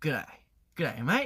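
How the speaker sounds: broad Australian accent, words run together, on "g'day". Showing the greeting used once the accent is mastered: thick Australian accent. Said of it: "호주 억양을 마스터했다 싶으면은".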